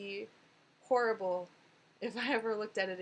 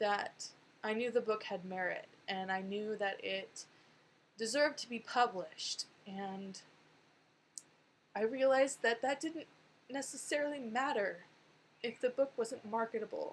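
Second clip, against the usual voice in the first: emotional, with emotion rising through the words. Telling the story of a hard past reality about the book, getting so emotional. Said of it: "I'm getting so emotional".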